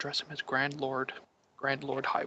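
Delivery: hushed half-whisper, no voice at all. Half-whispering advice to a nervous companion in court: half-whisper. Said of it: "I'm going to whisper to Elric".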